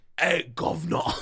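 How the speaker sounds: low, mock Cockney accent.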